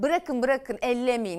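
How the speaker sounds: ordinary delivery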